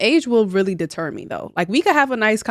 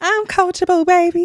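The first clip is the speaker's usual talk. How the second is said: mocking, put-on high-pitched voice, pitched higher; 10 semitones higher than usual. Repeating another speaker's quoted line back at them: imitating in a high-pitched voice. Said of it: "the high-pitched voice?".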